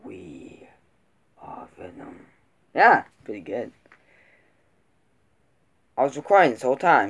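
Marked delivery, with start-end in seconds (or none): 0.0-2.3 soft whispered character voice. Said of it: "I think I got his voice down".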